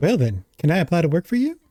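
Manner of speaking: put-on American South accent. Voicing a woman asking to work as a mascot, in a southern accent. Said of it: "Why am I giving her a southern accent?".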